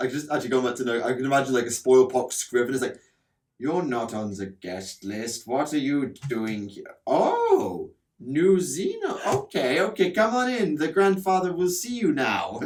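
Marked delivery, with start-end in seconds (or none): 3.6-12.6 slow, deliberate, put-on German accent. Improvising a character from an imagined script, in a German accent. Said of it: "Why is he German?".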